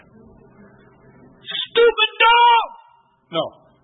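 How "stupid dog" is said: high, slow angry outburst. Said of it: "Man, I was mad".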